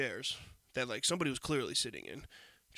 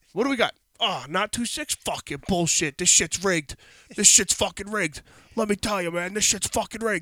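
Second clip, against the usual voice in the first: high, very loud, raging furious screaming; 6 semitones higher, 12 dB louder than usual. Retelling a man losing his bet at the table, retelling a screaming gambler. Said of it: "he's just screaming".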